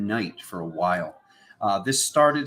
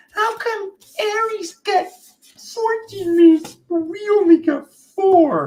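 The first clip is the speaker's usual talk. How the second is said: very high, very loud, silly put-on voice; 9 dB louder than usual. Talking to listeners about a playlist track, doing a put-on voice. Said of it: "I'm doing that voice for you".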